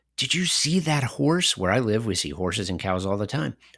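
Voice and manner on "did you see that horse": put-on slow, high toddler-talk voice.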